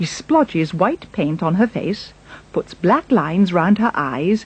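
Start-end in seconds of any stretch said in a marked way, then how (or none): none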